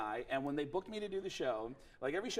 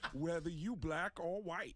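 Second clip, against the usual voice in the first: put-on Bronx accent, pitched higher; 3 semitones higher than usual. Showing how everyone in the Bronx sounds: Tracy Morgan impression. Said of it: "everyone in the Bronx sounds like Tracy Morgan".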